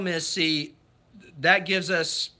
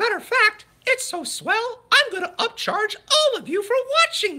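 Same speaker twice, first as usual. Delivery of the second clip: mock squeaky cartoon mouse voice; 3 dB louder than usual. Joking about charging viewers to watch: Mickey Mouse voice. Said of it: "to do my impression".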